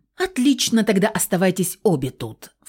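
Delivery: hot-tempered, angry, flared-up snap. Фауст answers the narrator's refusal to fly with him; flaring up. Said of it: "Вспылил Фауст".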